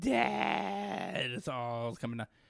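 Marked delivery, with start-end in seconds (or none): 0.0-1.3 put-on mild, held-in small child's crying wail, swooping pitch. Speaker retells a boy on a plane screaming for his dad; imitating a child screaming. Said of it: "he's screaming for his dad".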